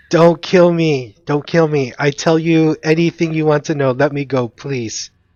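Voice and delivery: desperate, pleading, begging goblin voice. Running a fantasy game, the narrator voices a goblin running from the fire: begging goblin voice. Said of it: "And he's like begging".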